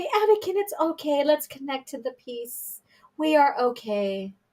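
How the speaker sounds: very sarcastic, sing-song, coddling, soothing voice. Mocking how a master would coddle a Padawan: mock soothing voice, sarcastic. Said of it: "I'm being very sarcastic and I'm, I'm making fun".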